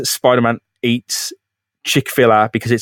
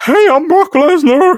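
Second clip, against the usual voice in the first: really bad voice, very high, shrill, loud, slow; 6 dB louder than usual. Never having heard him speak, imagine how he introduces himself, in a really bad Brock Lesnar voice. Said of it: "Really bad voice".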